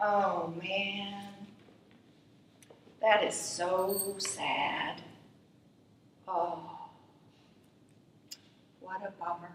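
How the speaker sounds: hushed, very slow sympathetic voice, drawn-out so. Showing how an empathetic response to a child's mistake sounds: empathetic, sad tone. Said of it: "And it sounds like this".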